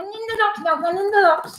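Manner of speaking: high, clumsy, badly done ventriloquist dummy voice. Voicing someone sealed in a taped box: bad ventriloquist voice. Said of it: "you're doing the voice really badly".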